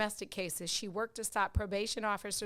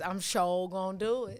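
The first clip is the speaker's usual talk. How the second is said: put-on Southern US accent. Wrapping up a chat with Dawn, in a down south voice. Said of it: "in my down south voice".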